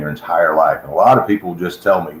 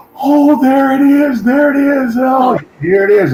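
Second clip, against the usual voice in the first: put-on very high, drawn-out, little-kid glee and delight; 5 dB louder than usual. Retelling a stage volunteer spotting a waved hot dog: imitating a delighted child. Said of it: "he lights up like a little kid".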